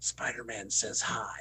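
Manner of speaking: spooky, low, eerie, confiding voice. Recalling a photo with a Freddy Krueger performer who leaned to his ear: Freddy Krueger whisper. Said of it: "whispers in my ear and goes".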